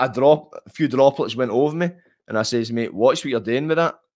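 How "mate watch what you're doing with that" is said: normal talking voice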